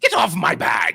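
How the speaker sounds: loud creature voice. Mid-game, voicing something that looks at the player and grins, said with a grin. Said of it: "grins at you and says".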